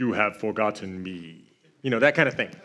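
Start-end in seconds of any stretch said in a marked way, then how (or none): 0.0-1.4 deep, low, slow, cool voice. Retelling Mufasa's line to Simba, in a Darth Vader-y voice. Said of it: "like Darth Vader-y kind of voice".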